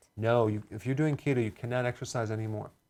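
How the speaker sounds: ordinary delivery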